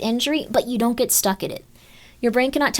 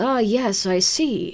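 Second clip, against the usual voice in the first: put-on very slow young-boy savant voice; 3 semitones lower than usual. Speaker demonstrates how they voice their character Birdly, young boy savant voice. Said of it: "like a young boy".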